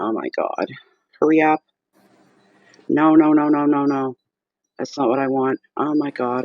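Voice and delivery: frantic, flustered, panicked pleading. Stuck with slow internet and things going wrong, the speaker is panicking. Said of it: "I'm panicking".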